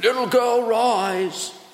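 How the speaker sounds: loud, high shout with stretched, drawn-out rise. Showing how a dramatic command would sound if shouted: shouting across a room. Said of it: "raise his voice and shout across the room".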